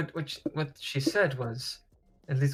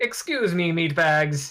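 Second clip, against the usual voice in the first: loud, raised, echoing metallic voice; 3 semitones higher, 5 dB louder than usual. The narrator voices Alfred speaking from a distant part of the ship; Alfred's echoing metallic voice. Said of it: "the echoing and metallic voice of Alfred".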